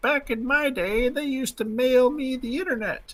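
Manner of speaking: very high-pitched put-on grandmother voice. Retelling a meme about someone's six-year-old, speaking in a grandmother's voice. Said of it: "in like a grandmother's voice is like".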